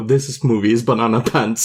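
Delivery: ordinary talk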